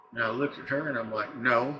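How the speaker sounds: ordinary delivery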